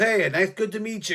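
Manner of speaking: loud hyped-up voice. Retelling being introduced to a man by a friend, imitating a hyped-up guy. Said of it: "he was all hyped up".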